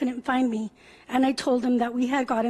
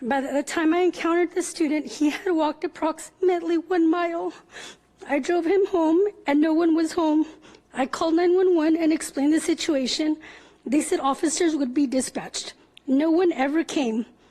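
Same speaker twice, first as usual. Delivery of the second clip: fighting back tears, voice breaking; 4 semitones higher than usual. Speaking publicly about finding a seven-year-old student walking home alone, on the verge of tears. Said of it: "I'm sorry, I'm going to cry".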